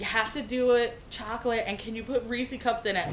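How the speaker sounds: usual speaking voice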